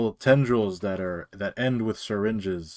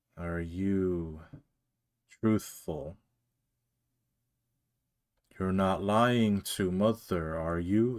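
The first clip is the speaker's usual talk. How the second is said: put-on creature voice, quieter; 4 dB quieter than usual. Speaking as the thing coming out of the dark portal, in a put-on creature voice. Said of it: "You heard that voice coming from it".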